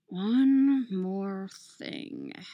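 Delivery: mumbled, offhand. A narrator reads a character's remark while he works on a device: muttered. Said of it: "Tony mutters".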